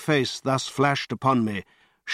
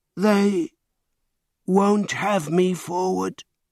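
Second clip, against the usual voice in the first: odd, slow, hoarse, deliberate, pitched-up voice; 5 semitones higher than usual. Reading a novel, voicing the cowering man Montgomery orders forward: slow, hoarse voice. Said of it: "He spoke slowly, with a queer, hoarse quality in his voice".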